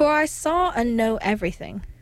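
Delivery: plain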